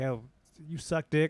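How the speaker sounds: slow, blunt, confrontational comic delivery. Describing an edgy comic who goes up on stage: imitating an antagonist comic. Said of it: "I'm talking about the guy who goes up".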